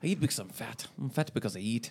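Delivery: very soft, low, hushed Scottish brogue. Asked to do the impression from work again, doing a Fat Bastard impression. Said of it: "Say it again".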